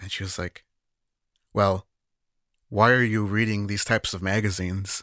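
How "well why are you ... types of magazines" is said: mock-disappointed, put-on disappointed tone. A speaker retells a woman reacting to them: mock-disappointed question. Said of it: "very deep and disappointed sigh".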